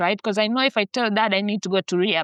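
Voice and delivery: ordinary talk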